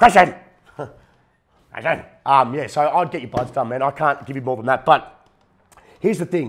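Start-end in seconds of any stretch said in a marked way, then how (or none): 0.0-2.0 loud, scolding hollering voice. Imitating his mother telling him off, calling his name. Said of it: "That's a very good impersonation".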